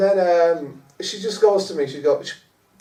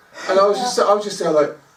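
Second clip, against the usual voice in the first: plain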